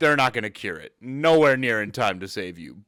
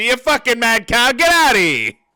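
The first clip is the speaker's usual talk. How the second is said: put-on very high, shrill, raised old-fashioned fifties doctor voice; 11 semitones higher, 6 dB louder than usual. Imagining a doctor dismissing a patient's symptoms: 1950s doctor impression. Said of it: "Like a nineteen fifties doctor".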